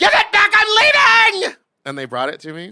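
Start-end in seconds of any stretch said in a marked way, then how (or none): 0.0-1.6 very high, very loud, shrill, drawn-out scream. Retelling a standoff at a car dealership, retelling own scream. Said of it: "And I just screamed".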